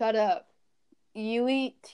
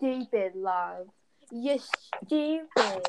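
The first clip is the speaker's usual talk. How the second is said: poorly put-on British accent. Imitating British girls bragging about makeup: bad put-on British accent. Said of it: "don't know how to do British accent".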